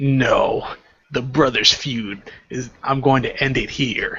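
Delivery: slow, deliberate, focused, single-minded delivery. Quoting a character's line from the manga: imitating Naruto speaking slowly. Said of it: "he says it, like, slowly".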